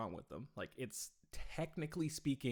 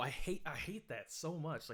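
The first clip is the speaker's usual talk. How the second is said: ordinary talk, nothing marked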